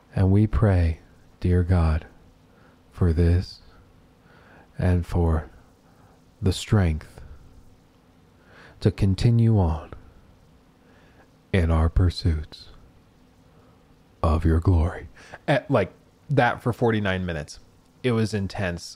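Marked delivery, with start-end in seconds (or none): 0.2-15.1 put-on flat monotone, like praying, lower pitch. Imitating a pastor who prayed for 49 minutes, in monotone praying. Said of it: "praying in this like really monotone voice".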